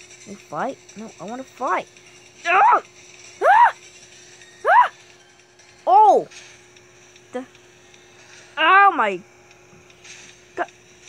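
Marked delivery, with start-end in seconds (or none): 2.5-6.3 high, loud screaming. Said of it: "Am I screaming too loud?".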